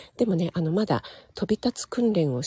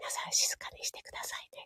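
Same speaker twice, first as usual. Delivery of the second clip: hushed whisper, much quieter. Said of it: "ささやきおかみみたいな感じで".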